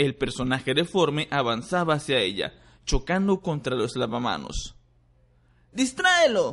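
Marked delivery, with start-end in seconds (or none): 5.7-6.5 frantic, desperate, very high-pitched shout. Harry, as the creature advances on Granger, a desperate shout. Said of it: "Gritó Harry desesperado".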